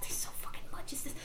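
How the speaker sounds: quiet muttering under breath.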